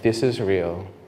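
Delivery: imitated very soft voice. Retelling another voice heard during prayer: imitating a very soft voice. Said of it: "Very, very soft voice".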